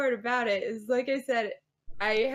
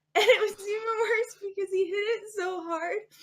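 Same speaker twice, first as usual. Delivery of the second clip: talking through cry-laughter; 8 semitones higher than usual. Telling a story to others, who say she's crying: cry-laughing while talking. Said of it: "You're crying right now".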